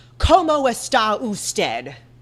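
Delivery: put-on sharp, blunt Spanish spoken in an American accent. Imitating a woman trying to speak spanish, in a sharp, blunt american accent. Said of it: "Like very sharp and blunt, like an American would".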